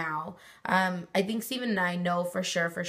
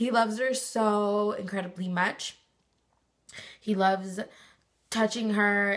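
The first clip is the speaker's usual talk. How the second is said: tearful, choking up, about to cry; 3 semitones higher than usual. Talking about the father's love for the unborn daughter: tearful, about to cry. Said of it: "I'm gonna cry".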